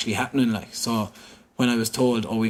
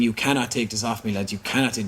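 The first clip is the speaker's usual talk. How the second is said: ordinary talk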